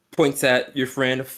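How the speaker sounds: usual speaking voice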